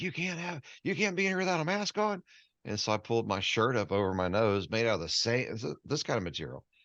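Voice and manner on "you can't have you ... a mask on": very high-pitched, acted-out, shouted angry yell. Retelling what a man in a store said: imitating someone yelling. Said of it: "he was yelling at me".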